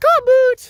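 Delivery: very high-pitched dog-talk voice. Out walking with the dog Boots, praising it: talking-to-your-dog voice. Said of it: "you have to use that voice with your dog".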